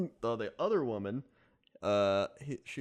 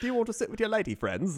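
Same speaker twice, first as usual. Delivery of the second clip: polite, gallant, pitched-up charming gent voice; 8 semitones higher than usual. Retelling the train man's greeting: imitating a Hugh Grant-like man. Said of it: "basically Hugh Grant from every Hugh Grant movie".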